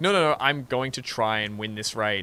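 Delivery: plain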